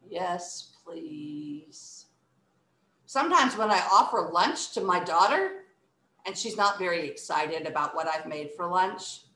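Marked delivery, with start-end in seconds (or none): 0.1-2.0 low, flat, really bored, uninterested delivery. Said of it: "Let's say that one really bored".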